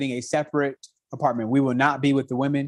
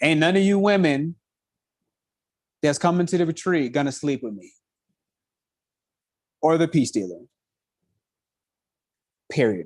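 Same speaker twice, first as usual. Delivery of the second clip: very serious, stern, firm, no-nonsense tone. Addressing women coming to the retreat, very serious tone. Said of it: "very serious tone of voice".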